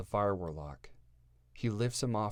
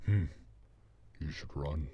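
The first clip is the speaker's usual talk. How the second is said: deep, eerie, sinister, haunting orc voice; 4 semitones lower than usual. Narrating a story, an orc stands over a fallen man; deep, haunting orc voice. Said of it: "with a deep and haunting voice".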